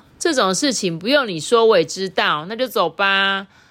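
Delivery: derisive, scoffing, scornful mockery. Reading a character's reply as they sneer at him, mocking and scoffing. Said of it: "还嘲笑他说".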